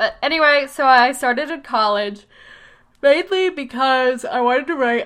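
talking through a yawn. Right after doing yoga, yawning while talking. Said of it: "I'm sorry, I'm yawning".

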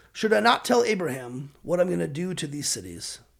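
ordinary talk, nothing marked

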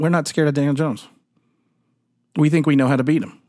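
imitated deadpan delivery. Quoting a person who ribbed them about the Giants, retelling a deadpan remark. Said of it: "deadpan face".

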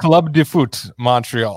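name pronounced with a French accent. Asked by the host to say the team's new name: French accent. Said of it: "I have the French accent".

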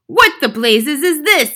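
very loud, high-pitched, demanding yell. Seeing her own name written by an invisible hand, she yells. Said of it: "yelled the Trunchbull".

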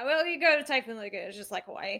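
very quiet, hushed, offhand dismissive tone. Quoting how he brushed off a Hawaiian honeymoon, imitating a dismissive remark. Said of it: "he says it so dismissively like that".

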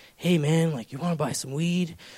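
sleazy, shady, creepy hustler voice. Acting out temptation as a trench-coat guy offering weed: put-on creepy guy voice. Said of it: "Like some creepy guy in a trench coat in the corner".

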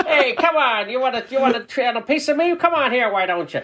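put-on high, tough-guy, old-movie gangster voice. Acting out the American gangsters in a British film: 1930s Spencer Tracy gangster voice. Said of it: "very Spencer Tracy of that nineteen thirties".

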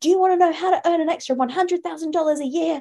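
imitated fast talking. Imitating people pitching ways to earn extra money: imitating fast talkers. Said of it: "people who speak really fast and they say".

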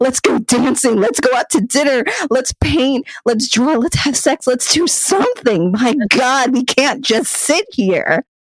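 put-on yelling. Retelling a scene of yelling at a partner: imitating yelling at a partner. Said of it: "I start yelling at my partner".

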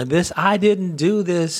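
put-on, half-hearted protesting scream, mild yelling. Recalling an interview, the speaker retells R. Kelly screaming. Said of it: "he's just screaming".

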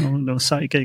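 ordinary talk

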